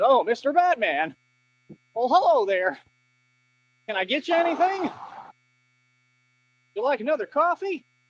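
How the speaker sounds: play-acted, over-the-top courtesy. Imitating a tough-acting internet critic being polite in person: imitating someone overly polite. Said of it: "That boy would be polite as hell in person".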